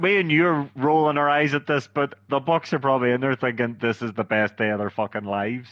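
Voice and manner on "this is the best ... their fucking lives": ordinary talk, nothing marked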